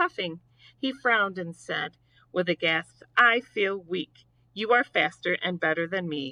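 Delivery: ordinary delivery, nothing marked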